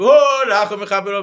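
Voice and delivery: piercing, very high-pitched, very loud scream. Speaker retelling how he screamed out a prayer line, re-enacting a scream. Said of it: "and I started screaming".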